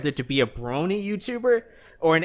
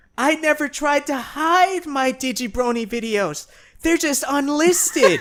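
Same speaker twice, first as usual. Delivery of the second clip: very high, sneering, mocking put-on voice; 12 semitones higher, 3 dB louder than usual. Quoting what Digi said about unlisting his videos: mocking Digi impression. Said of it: "the voice you were doing was making fun of him".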